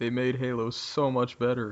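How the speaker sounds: sarcastic, fake enthusiastic praise. Praising armor abilities in a game: sarcastic fake praise. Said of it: "You were just being sarcastic".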